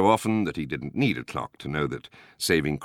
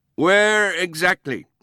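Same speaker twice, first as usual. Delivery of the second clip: very high, very loud, insistent, demanding; 6 dB louder than usual. Narrator reads the man at the ambulance station answering a caller, demanding. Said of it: "demanded the voice at the other end".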